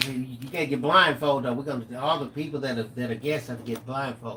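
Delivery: normal talking voice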